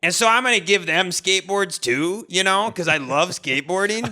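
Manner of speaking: put-on, kind skate guy voice. Retelling a story about a man at the park, imitating his voice. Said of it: "I just can't stop laughing at this voice".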